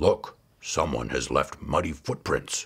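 very low, growled bear voice. Narrator voicing Father Bear's line to the other bears, growling. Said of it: "growled Father Bear".

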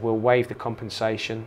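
plain

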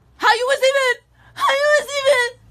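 high, loud, tearful, angry crying yell.

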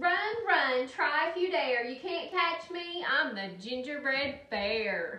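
loud, roaring, bellowing storybook-style taunt. Narrating, the gingerbread bear runs into the park away from the little girl: roaring. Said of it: "Then he roared".

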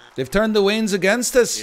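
very high, loud, exaggerated put-on Scottish accent. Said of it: "you can say that I sound Scottish".

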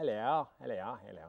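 exaggerated parody English accent. Showing how his attempts at his wife's accent come out, parody English accent. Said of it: "it sounds like a parody".

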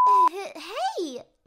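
excited tone with leaping pitch.

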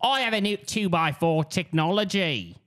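put-on English accent, Australian-sounding. Asked to say a line as Nigel Uno: Nigel Uno impression, a little Australian. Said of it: "That's Australian a little".

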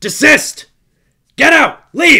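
shrill, very loud, high-pitched barking shout. Narrating a game scene, the narrator voices a shout at the players, barking shout. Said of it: "As you hear it shout".

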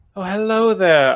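light, airy, graceful voice. Acting out sauntering up to ask for beverages: light, airy, graceful. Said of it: "very gracefully and kind of airily just say".

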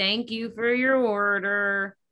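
sad, gloomy, enthusiasm-free delivery, drawn out. Showing a voice text to customers without enthusiasm: gloomy Eeyore voice. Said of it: "Now I sound like Eeyore".

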